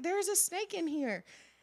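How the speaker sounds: very high, shrieking, screaming alarm. Retelling yelling for dad to hurry about a snake: imitating herself screaming.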